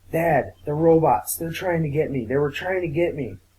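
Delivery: ordinary talk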